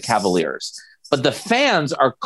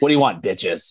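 put-on raspy chain-smoker voice, much lower; 4 semitones lower than usual. Co-hosts riffing on a chain-smoking late-night diner server, chain-smoking waitress voice. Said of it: "a server at waffle house or something that smokes like 800 cigarettes".

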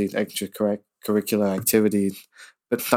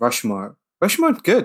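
tentative, unsure, high and swooping delivery; 8 semitones higher than usual. Hosts discussing Wes Anderson films, one naming Rushmore: hesitant. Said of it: "He said hesitantly".

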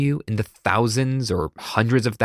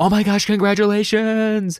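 high, excited, gushing voice. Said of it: "a stranger excitedly go".

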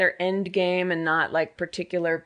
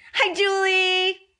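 very high-pitched voice; 14 semitones higher, 4 dB louder than usual. Recalling how Frankie greeted the host: imitating Frankie's greeting. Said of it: "remember how Frankie said it?".

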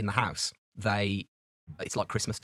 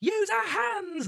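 put-on high, slow child coach voice shouting. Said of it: "the coach, you know, it's all like".

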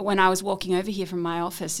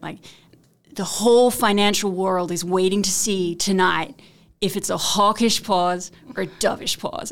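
terrible fake American accent, raised pitch; 5 dB louder than usual. Retelling some guy's wording that made them laugh, in a terrible american accent. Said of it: "American guy, do a terrible accent".

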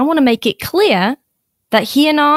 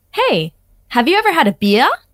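put-on, audition-style American accent; 2 semitones higher than usual. Actor asked to say his line during a take, American accent. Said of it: "Let me hear a little bit of that American accent".

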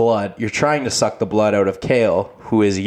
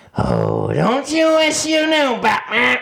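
manic taunting tone, very high and swooping. In a Batman skit, the Joker taunts Batman on the phone in a Joker voice. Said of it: "get my Joker voice down".

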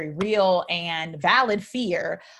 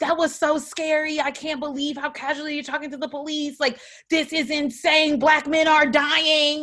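mock freaked-out, panicky venting; 9 semitones higher than usual. Retelling the ride home from dinner, quoting the speaker's past self: retelling freaking out. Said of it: "I'm just like freaking out".

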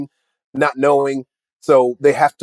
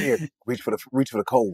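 whispered, much quieter; 2 semitones lower, 9 dB quieter than usual. Acting out someone whispering to a blind kid at a Make-A-Wish event, whispered. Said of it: "somebody whispers".

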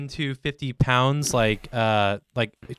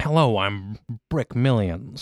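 put-on old-timey, mustachioed gentleman character voice. Inventing a character named Brick Millions after reading the phrase: Brick Millions character voice. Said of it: "sounds like the name of a guy with a twisty mustache".

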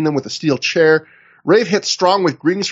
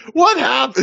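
angry scream, higher; 9 semitones higher than usual. Retelling a wrestler reacting backstage: imitating an angry scream. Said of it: "He just screams so angry".

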